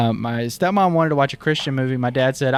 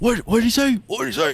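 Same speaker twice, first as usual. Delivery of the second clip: gasp, higher; 9 semitones higher than usual. Retelling a dad leaning forward during a movie: imitating Al's dad gasping. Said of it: "Al's dad voice".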